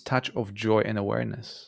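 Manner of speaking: ordinary delivery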